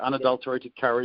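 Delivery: normal talking voice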